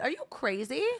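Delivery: put-on, angry telling-off. Retelling going off on an old man on a train: retelling telling someone off. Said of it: "going off on this guy".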